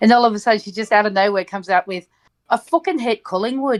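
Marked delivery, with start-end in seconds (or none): 2.5-3.8 put-on Irish accent, blurted out. Retelling what a woman suddenly said, imitating her Irish accent. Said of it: "coming out with an Irish accent".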